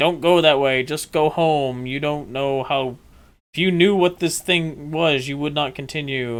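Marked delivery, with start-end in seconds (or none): none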